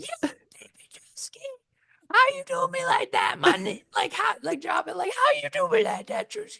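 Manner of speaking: very high, tearful, sobbing, pleading wail. Retelling a show elimination scene: imitating Meatball crying. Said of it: "Meatball was on the ground crying, like".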